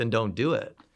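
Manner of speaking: put-on curt, blunt, cut-and-dried no-nonsense tone. Retelling his dad's short answer, imitating dad, cut and dried. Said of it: "it was like cut and dried".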